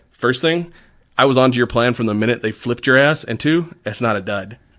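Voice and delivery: ordinary talk, nothing marked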